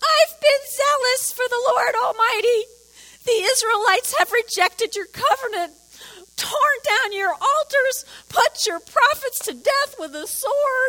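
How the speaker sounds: very high, loud, crying put-on whine. Speaker reading a bible verse aloud to the audience, in a whiny voice. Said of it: "Am I doing good on the whiny voice?".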